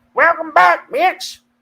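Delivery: very high, loud, comic hollering. Saluting Chappelle, then welcoming listeners back: Dave Chappelle impression. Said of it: "That's my Dave Chappelle impression".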